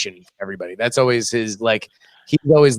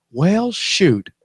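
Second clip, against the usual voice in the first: mild disappointment, voice pitched up; 7 semitones higher than usual. Imagining someone watching Auburn football: Tim Cook impression. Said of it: "that's my impression of Tim Cook watching".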